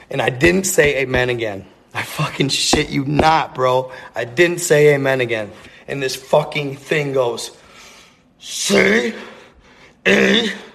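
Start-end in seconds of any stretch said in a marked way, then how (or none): 8.4-10.5 high, rough, rasping, growly creature voice. Telling his listener what the thing said to him, in a growly voice. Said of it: "it's in that growly voice just like that".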